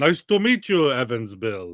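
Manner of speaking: Russian-accented voice. Joking about how a Russian would say a name: put-on Russian accent. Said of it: "That sounds like a Russian would say it".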